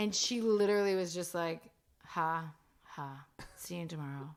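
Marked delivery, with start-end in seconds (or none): 2.1-4.3 mock unamused, flat, straight-faced deadpan. Retelling a secretary's reply to a crude joke: imitating someone's deadpan reply. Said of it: "such, just, like, a straight face".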